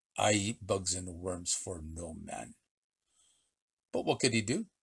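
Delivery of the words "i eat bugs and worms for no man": slow, very deep, hushed, resolute snarl. In a tale about Pancho Villa, he refuses to eat bugs and worms in a slow, determined snarl. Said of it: "In a voice that was slow but determined, he snarled".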